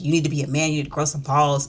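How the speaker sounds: ordinary talk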